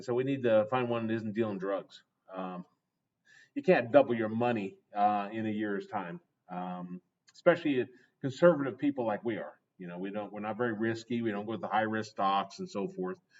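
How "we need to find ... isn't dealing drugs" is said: ordinary delivery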